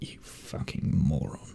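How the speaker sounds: hushed, breathy, half-whispered mutter. Playing a character who looks at the party while insulting them: muttering under breath. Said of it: "He's just like muttering".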